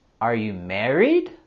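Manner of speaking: rising tune climbing on married. Practising an English yes-no question: rising intonation on married. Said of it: "we're going to have our rising intonation as this is also a yes, no question".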